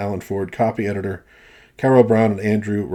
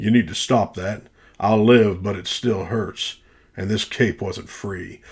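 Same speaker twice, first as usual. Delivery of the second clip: put-on low, deep, sort-of Texan cartoon voice. Redoing a character's line from the animation: deep texas accent. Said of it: "maybe I should try to do that deep uh, sort of Texas accent".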